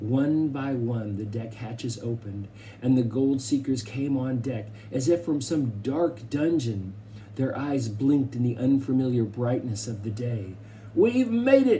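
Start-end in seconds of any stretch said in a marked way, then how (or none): 10.9-11.8 shouted, very high-pitched. A gold seeker comes up on deck and calls to the boys, yelled. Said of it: "yelled Mountain Jim".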